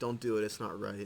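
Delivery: ordinary talk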